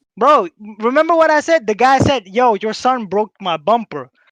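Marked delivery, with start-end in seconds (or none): none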